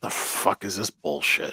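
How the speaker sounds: hushed, breathy whisper. Retelling what a coworker said during a town hall, imitating someone whispering. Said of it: "he's whispering to me".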